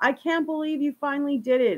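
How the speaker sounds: devastated, anguished, high, distraught screaming. Retelling a man finding his children drowned, imitating a man screaming. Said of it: "he's screaming like".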